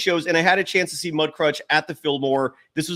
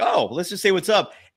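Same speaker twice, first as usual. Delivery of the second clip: plain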